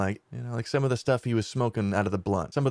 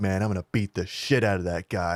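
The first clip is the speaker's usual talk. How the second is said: put-on super-serious gangster manner; 3 semitones lower than usual. Retelling what the plug said after a guy rode off owing him money, mock super-serious gangster mode. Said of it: "Like super serious, all like super gangster mode".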